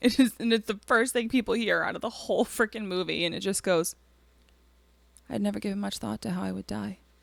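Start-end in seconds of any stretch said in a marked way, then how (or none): 5.3-7.0 flat, toneless, dead-level monotone delivery. Quoting a movie's opening narration as it is delivered: flat monotone voice. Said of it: "in the most monotone voice possible".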